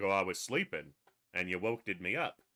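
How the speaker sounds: speaking as a dog. Speaking for a sleepy dog just woken up: voicing the dog. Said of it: "He's like".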